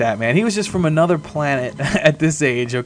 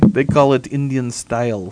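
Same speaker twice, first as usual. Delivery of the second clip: speaking with Russian accent; 3 semitones lower than usual. After being told the accent sounded russian, repeating the phrase in a russian accent. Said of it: "Now that was my Russian".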